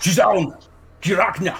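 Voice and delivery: short, light, called-out shout. A game narrator voices the alligator man calling out the door, shouting. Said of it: "and shouts".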